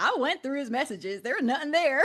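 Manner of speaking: put-on thickest, heavy rural country accent. Retelling what a friend said in a video: imitating thick country accent. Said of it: "in, like, the thickest country accent".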